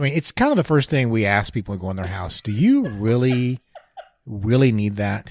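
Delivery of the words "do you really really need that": very slow, drawn-out, swooping sarcastic tone. Joking about questioning visitors in their house: put-on sarcastic tone. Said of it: "He's being sarcastic".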